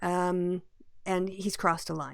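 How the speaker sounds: ordinary talk, nothing marked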